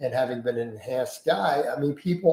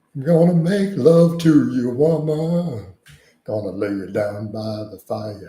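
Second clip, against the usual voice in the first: loud, slow, stretched-out seductive voice; 2 semitones lower, 5 dB louder than usual. Doing a sexier voice on request: Chef voice. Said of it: "That's Chef".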